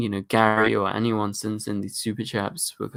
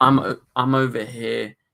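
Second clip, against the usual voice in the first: ordinary talk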